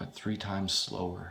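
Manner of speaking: ordinary delivery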